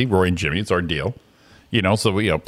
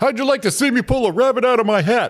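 very high-pitched cartoon character voice; 14 semitones higher than usual. Acting out the skit when the other speaker plays Rocky: Bullwinkle voice. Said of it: "so you're gonna be Rocky?".

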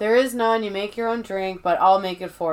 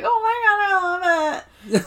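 mock tearful, very high, slow sobbing words; 10 semitones higher than usual. Retelling a crying character's grateful reaction to a gift: imitating someone crying. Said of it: "crying and she's like".

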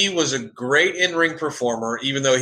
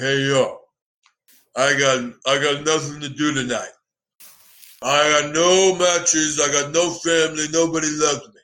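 put-on drunk wrestler voice. Retelling what a wrestler said coming out in street clothes: imitating Scott Hall drunk. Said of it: "You sound like a really mentally handicapped Stallone".

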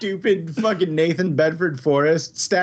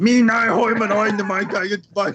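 grumbling gibberish cartoon voice, higher; 5 semitones higher than usual. Imitating a cartoon character who grumbles gibberish: Doodle Bob grumbling voice. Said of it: "grumbles stuff".

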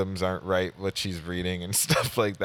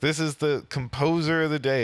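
mock, heavily sarcastic tone, pitched up; 8 semitones higher than usual. Retelling the conductor introducing the composer to the players: imitating a sarcastic conductor. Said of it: "he sounded, like, so sarcastic".

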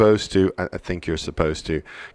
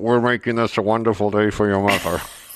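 put-on speech through gritted teeth, faster; 3 semitones higher than usual. Imitating dads on mother's day, speaking through gritted teeth. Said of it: "through grit teeth go".

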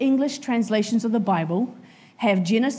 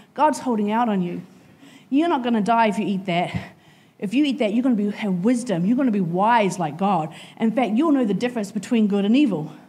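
plain

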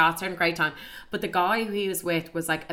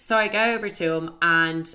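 ordinary talk, nothing marked

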